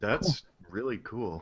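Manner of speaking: very quiet, unenthused, barely there. Reacting to a research plan another speaker describes: flat, unexcited. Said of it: "you don't sound excited".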